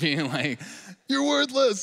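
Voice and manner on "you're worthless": play-acted, very high, shrill, loud angry scolding. Acting out being cut off in traffic: imitating chewing someone out. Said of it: "while I'm chewing this guy out".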